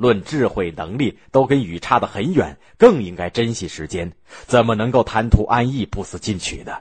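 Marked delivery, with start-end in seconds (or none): none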